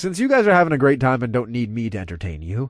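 ordinary delivery

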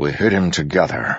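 plain

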